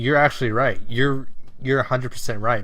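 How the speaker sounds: plain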